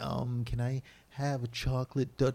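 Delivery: put-on slow, high, drawn-out small-kid voice. Picturing the other speaker ordering at Dunkin' Donuts: imitating a childlike voice. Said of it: "in your childlike voice saying".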